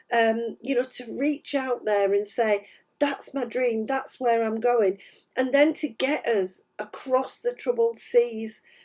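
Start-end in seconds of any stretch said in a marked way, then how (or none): none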